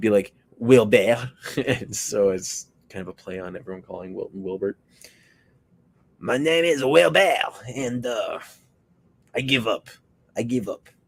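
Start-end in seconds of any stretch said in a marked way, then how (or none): 6.2-10.9 put-on slow, high-pitched, drawn-out Russian accent. Improvising a troll character named Wilbert, in a Wilbert voice drifting Russian. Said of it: "Now I'm going like Russian again".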